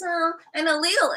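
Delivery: put-on near-tears voice. Mocking a politician's voice, imitating a whiny Kamala Harris voice. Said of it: "I could never stand her voice".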